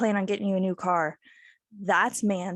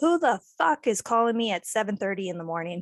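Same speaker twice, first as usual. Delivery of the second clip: ordinary delivery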